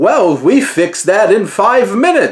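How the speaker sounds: TV announcer delivery. Describing a cartoon scene to a co-speaker, doing the South Park announcer voice. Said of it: "the announcer voice comes in".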